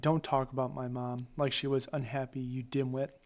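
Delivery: ordinary delivery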